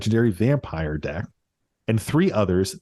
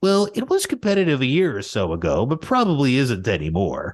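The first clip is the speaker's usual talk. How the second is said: play-acted, put-upon whining in swooping sing-song; 3 semitones higher than usual. Retelling an opponent's reply during a card game, mimicking a whiny voice. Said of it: "He responds with whiny bitch voice".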